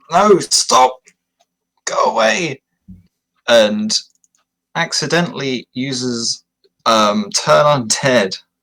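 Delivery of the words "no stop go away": loud shout, much higher pitch. A character shouts at a beast attacking a companion, loud shout. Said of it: "Veshla loudly shouts".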